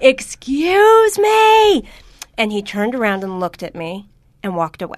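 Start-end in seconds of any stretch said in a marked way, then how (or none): 0.0-1.9 piercing scream, very loud, very high and shrill. Speaker recounting not getting served in a restaurant, retelling a loud scream. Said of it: "I actually screamed really loudly".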